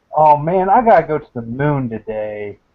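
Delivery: weary, resigned, bored and defeated tone. Imagining what someone in the future will say, in a mock bored, defeated tone. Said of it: "in a bored, defeated tone".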